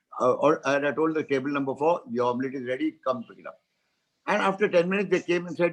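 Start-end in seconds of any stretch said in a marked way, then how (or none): none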